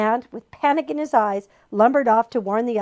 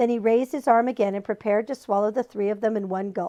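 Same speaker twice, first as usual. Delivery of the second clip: ordinary delivery, nothing marked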